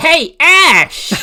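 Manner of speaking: very high, loud, nasal cartoon shout. Recalling a cartoon rival's greeting, nasal Gary Oak voice. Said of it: "He's really nasally".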